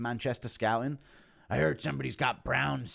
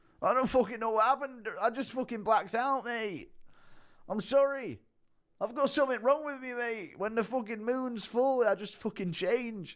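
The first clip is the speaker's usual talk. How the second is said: very high, out-of-control, unhinged delivery; 10 semitones higher than usual. After a five-dollar request, doing an impression of Tom losing control. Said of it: "Impression of Tom losing control because of Brown syndrome and waking up".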